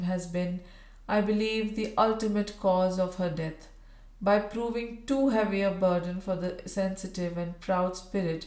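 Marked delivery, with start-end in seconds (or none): none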